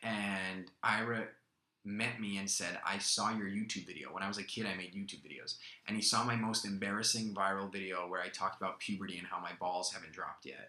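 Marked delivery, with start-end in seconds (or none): none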